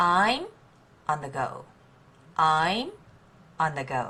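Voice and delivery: stress on I'm, on the go reduced and thrown away.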